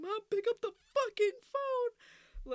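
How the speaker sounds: very high, shrill, very loud, scared screaming. Retelling calling their mom while scared, reenacting screaming at the phone. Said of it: "I was screaming at my phone".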